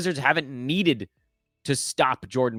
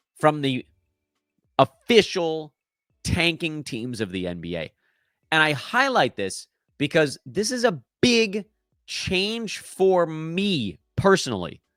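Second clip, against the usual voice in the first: very slow, deliberate, drawn-out delivery. Speaker addressing longtime listeners, very slow. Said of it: "why are you talking so slowly?".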